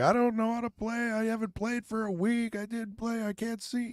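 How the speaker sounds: soft, high-pitched whining voice. Retelling what a man said at a billiards hall, imitating Little John Fields' high whiny voice. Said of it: "in his high pitched, whiny voice".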